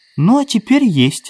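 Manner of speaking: affectionate, tender, very high voice. A woman answers the man she calls darling, speaking tenderly. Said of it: "сказала она ласково".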